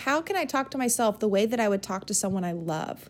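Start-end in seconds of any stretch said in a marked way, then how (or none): none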